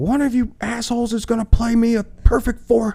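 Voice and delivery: mock screaming, shrill, pitched way up. Retelling how the man who called the band in screamed at the drummers, retelling a scream. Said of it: "He's just screaming at these drummers".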